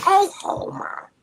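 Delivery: loud, very high-pitched cartoon voice. Retelling how high school friends teased: Marge Simpson voice. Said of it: "Marge Simpson".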